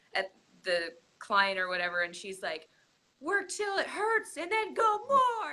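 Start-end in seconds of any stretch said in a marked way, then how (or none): 3.1-5.5 play-acted very high, shrill yell. Retelling a fitness ad where a trainer shouts at a client: imitating a trainer yelling. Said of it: "the girl is yelling at the".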